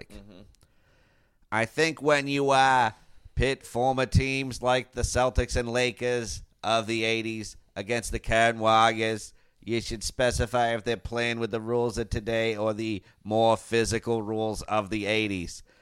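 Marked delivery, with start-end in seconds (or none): 1.5-15.6 put-on talks with Boston accent. Reading out a listener's message, imitating JC's Boston accent. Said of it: "let me give a version of what this person's voice sounds like".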